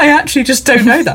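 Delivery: laughing, mocking voice.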